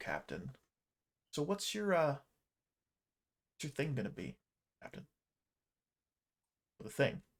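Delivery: soft, close half-whisper. A character leans over and speaks to the captain: half-whisper. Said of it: "he leans over and he whispers to".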